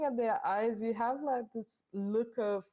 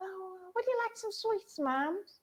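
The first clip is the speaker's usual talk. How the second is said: really squeaky, pitched-up put-on voice; 9 semitones higher than usual. Narrating a game scene, a voice from behind offers sweets: really squeaky voice. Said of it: "this really squeaky voice from behind that goes like".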